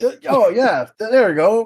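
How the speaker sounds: loud voice broken by hiccups. In character, finding the disguise: loud with a hiccup in character. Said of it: "But sort of loud, like, hiccup".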